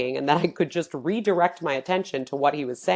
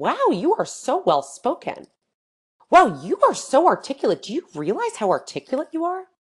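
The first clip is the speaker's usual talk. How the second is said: high, swooping tone of surprised admiration; 8 semitones higher, 3 dB louder than usual. Retelling a man's account of what people said to him, mimicking a surprised tone. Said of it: "with this surprised tone".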